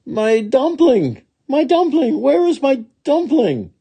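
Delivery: very high, searching cry, shouted. A narrator reads a woman's lines as she runs, shouting while running. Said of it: "she shouted as she ran".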